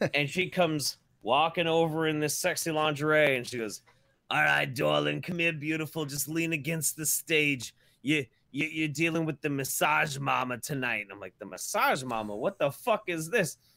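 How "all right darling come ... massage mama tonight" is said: put-on withered old woman voice, higher pitch. Retelling the stripper who came over to him, imitating a withered old stripper. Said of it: "withered old".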